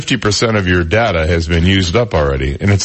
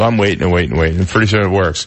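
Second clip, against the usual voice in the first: normal talking voice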